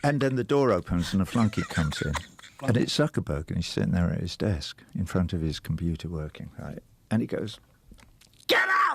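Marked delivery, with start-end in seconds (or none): 8.5-9.0 shrill, very high shouting. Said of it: "he doesn't speak like that".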